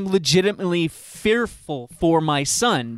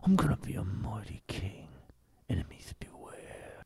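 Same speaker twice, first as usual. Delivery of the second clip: low, hushed English voice with a slight lisp; 7 semitones lower, 14 dB quieter than usual. Retelling a movie character's line: low english voice with slight lisp. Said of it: "he's got this real low English voice and a little bit of a lisp".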